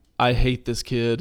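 normal talking voice

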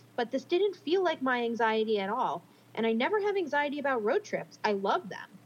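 normal talking voice

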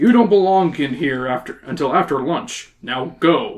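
ordinary talk

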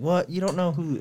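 mock very high, shrill, affronted and offended outburst. Retelling a man's reaction when a woman guessed Jackie Chan, retelling an offended reaction. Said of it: "he like got all offended and shit".

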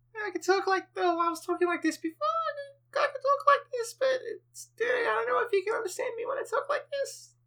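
very high, stretched-up voice. Asked how high they can go, the speaker shows off a very high-pitched voice. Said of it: "How high can you go?".

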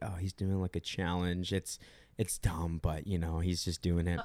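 soft, offhand, casual half-whisper. Retelling an explanation given to family at Thanksgiving: imitating a casual half-whisper. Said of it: "whispered casually".

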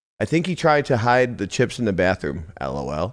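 ordinary talk

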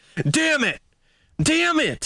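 mock shrill, very high, furious, angry shouting. Retelling how a man reacted badly when told about a call, imitating an angry shout. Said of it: "storming through the apartment shouting".

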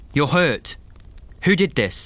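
high, pressing, insistent and demanding. Seeing a bruise on her face, he presses her for answers, demanding. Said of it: "Mark demanded".

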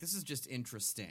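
ordinary talk

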